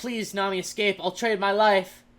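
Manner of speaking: acted crying, pleading voice. Retelling a character's dramatic final moment, imitating crying and pleading. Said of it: "he cries and he's like".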